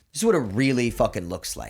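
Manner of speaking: heated, worked-up, angry ranting delivery. Mid-rant to the other speaker, worked up, ranting. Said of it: "I'm getting worked up now".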